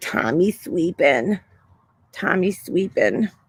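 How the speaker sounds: slow, l of sleeping said as w. Retelling what a friend's dad would say: talking like Elmer Fudd. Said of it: "My friend's dad talked like Elmer Fudd".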